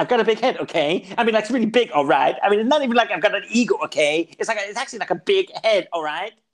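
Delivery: high rambling delivery. Retelling a comedian's bit, doing his Quentin Tarantino impression. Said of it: "his Quentin Tarantino impression".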